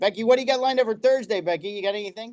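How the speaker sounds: high-pitched voice calling out across a room. Calling to becky as if she's in the back room: yelling across a room. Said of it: "I'm yelling like I have to talk to her".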